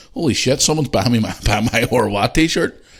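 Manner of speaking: put-on laughing hard mid-sentence. Retelling a reaction to seeing people's t-shirt pictures: imitating Lewis laughing while talking. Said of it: "Lewis is wetting himself laughing, going".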